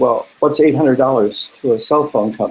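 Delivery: ordinary delivery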